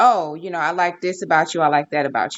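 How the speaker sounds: ordinary delivery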